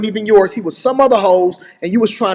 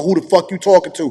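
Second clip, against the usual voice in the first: mocking, lower, tough masculine voice; 11 semitones higher than usual. Speaker mocks someone who now talks tough, in a put-on masculine voice. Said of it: "talking in all of that masculine voice".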